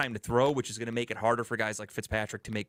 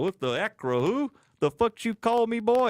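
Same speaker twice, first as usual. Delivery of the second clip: mock angry, very high, drawn-out hollering; 10 semitones higher, 6 dB louder than usual. Imitating a Steelers fan who cannot say Acrisure: imitating an angry Steelers fan yelling. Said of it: "they're gonna yell at everybody".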